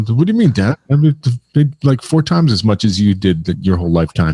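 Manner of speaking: plain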